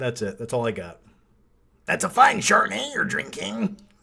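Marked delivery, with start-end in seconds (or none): 1.8-3.8 rough, creaky rasp, pitched up. Answering a viewer's request, quoting a film line as a Nick Nolte impression. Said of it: "while doing a Nick Nolte impression".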